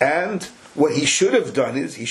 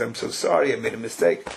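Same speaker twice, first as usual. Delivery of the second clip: put-on sheepish, tearful crying voice; 4 semitones lower than usual. Telling a story, acting out a man who goes to another to apologize: mock-sheepish crying apology. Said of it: "kind of sheepishly and he cries".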